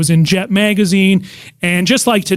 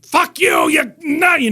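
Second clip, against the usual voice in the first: put-on ranting voice, much higher pitch; 10 semitones higher than usual. A comedian shows the voice he does when talking about Jack Carter: screaming rant. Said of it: "just screaming and ranting".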